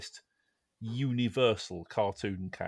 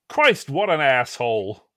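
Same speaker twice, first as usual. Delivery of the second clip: put-on American accent, louder and slower; 5 semitones higher, 13 dB louder than usual. Reading out the winning entry's line, in an American accent. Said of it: "I think you need an American accent for this one".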